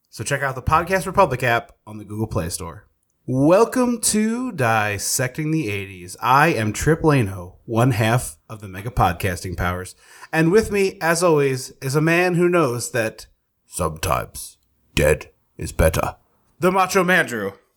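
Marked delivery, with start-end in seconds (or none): 13.7-16.2 very low, faint, understated put-on film-star voice. Introducing the co-host with a movie line: sounds a little like Michael Caine. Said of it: "A little Michael Caine".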